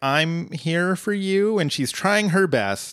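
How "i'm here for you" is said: very slow, nervous, reassuring tone. Retelling a TV scene where Britta comforts Annie: imitating Britta nervously. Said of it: "so nervously like".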